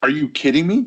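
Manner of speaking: acted-out, high-pitched, sarcastic tone. Retelling own reply to people around a table: imitating own sarcastic remark. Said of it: "they weren't sensing my sarcasm".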